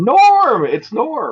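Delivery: high, loud, excited cry of recognition.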